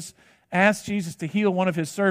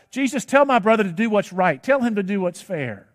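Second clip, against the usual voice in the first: plain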